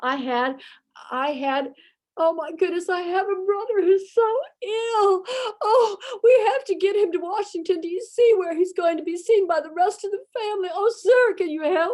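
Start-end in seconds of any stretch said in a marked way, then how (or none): 2.2-12.0 fake, weepy, tearful pleading, pitched high. Retelling pleading with a train master: imitating fake crying plea. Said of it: "I turned on the waterworks and I got my handkerchief out and I was crying".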